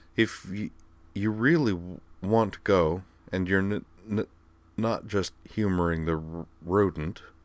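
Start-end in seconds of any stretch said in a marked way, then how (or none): none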